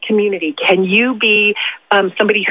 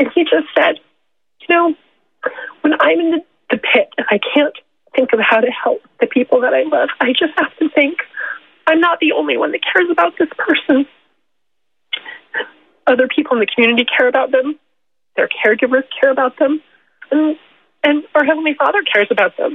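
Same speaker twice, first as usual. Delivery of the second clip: tearful, crying while speaking, much higher pitch; 6 semitones higher than usual. Recounting the bishop's advice about struggles with one of the children, crying while speaking. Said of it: "I'm sorry for crying".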